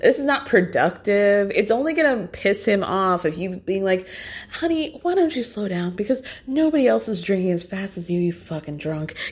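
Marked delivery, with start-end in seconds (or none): 4.5-9.2 mock condescending, mean, stern talking-down tone. Mocking how a cast member scolds a friend about drinking: imitating a condescending tone. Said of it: "condescending to me".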